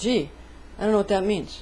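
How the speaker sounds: ordinary talk, nothing marked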